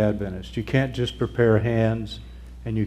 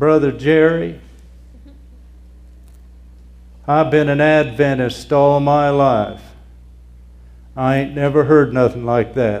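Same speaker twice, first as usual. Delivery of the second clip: very loud, put-on West Virginia accent; 4 semitones higher, 8 dB louder than usual. Quoting people who come up to him, best West Virginia accent. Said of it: "I'll use my best West Virginia accent".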